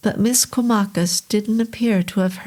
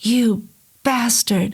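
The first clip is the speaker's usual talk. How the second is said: said between his teeth, through gritted teeth. Reading a tense scene aloud, a character speaks through gritted teeth. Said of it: "Neil said between his teeth".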